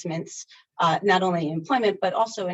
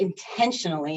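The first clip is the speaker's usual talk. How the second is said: leaning hard on the word "intentionally". Making a point, putting emphasis on the word "intentionally". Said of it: "I put emphasis on the word intentionally".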